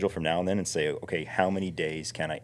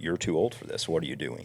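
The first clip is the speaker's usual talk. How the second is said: mock very serious, grave voice. Retelling what the doctor said after a bike crash: imitating a doctor speaking very seriously. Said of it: "very seriously".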